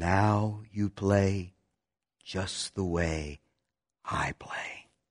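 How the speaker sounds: soft, gentle, slow delivery. A man speaks to the pianist who just played perfectly, softly. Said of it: "Emmanuel said softly".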